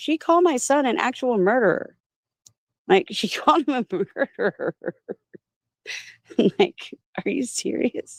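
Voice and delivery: laughing mid-sentence. Telling how someone called a son a murderer, laughing while talking. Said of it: "I'm laughing a little bit".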